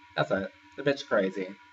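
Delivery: normal talking voice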